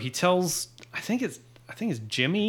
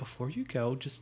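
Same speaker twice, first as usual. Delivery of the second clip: put-on patronizing, condescending tone, much quieter; 8 dB quieter than usual. Retelling how one character spoke to another as he left; mock-patronizing. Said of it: "she so patronizingly like".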